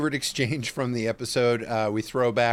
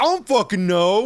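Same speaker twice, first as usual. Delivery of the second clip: play-acted, very high, loud, petulant delivery; 10 semitones higher, 6 dB louder than usual. Acting out a rude answer in a recap: petulant Ankh voice.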